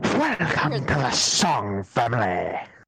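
grand, showy, swooping, animated character voice. Dared to attempt an impersonation, the speaker gives a booming Jasper impression. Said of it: "doing a booming, his best Jasper impersonation".

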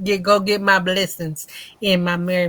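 ordinary talk, nothing marked

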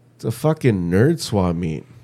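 loud, exclaiming voice. Quoting the speaker's lady as they walked in, retelling a loud remark.

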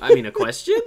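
put-on Valley Girl uptalk, pitched way up and loud.

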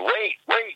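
screaming in panic. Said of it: "my wife was, like, screaming at me".

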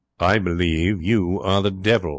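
ordinary talk

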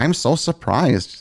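high-pitched, goofy, silly put-on funny voice. Retelling a wife's reaction to taking up running: funny voice imitating Liz. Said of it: "I don't think Liz sounds like that".

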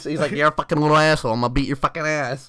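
lisping high-pitched voice. Retelling a man from a video, in a lisping high-pitched voice. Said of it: "he just has that lisp In his high".

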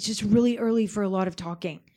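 ordinary talk

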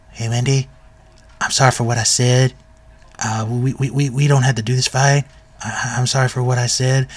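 imitated whisper. Retelling a character apologizing to Wendy to avoid a fight: imitating a whisper.

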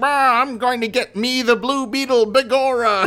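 exaggerated Irish brogue, high-pitched. Describing a New York cop character to a co-host, in Mike Manigan Irish cop voice. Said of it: "Irish cop stereotype".

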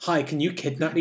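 ordinary talk, nothing marked

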